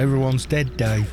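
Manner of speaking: comedic put-on east London accent. Quoting a line from a comedian, soft east London accent. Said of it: "It's got this soft, um, east, east of London sort of a-, accent".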